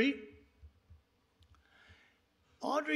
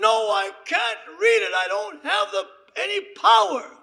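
screaming refusal.

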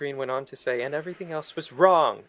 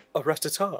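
goofy put-on character voice. Doing an impersonation of Jake's impersonation from a video: imitating Jake doing an impersonation. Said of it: "very best impersonation of Jake's impersonation".

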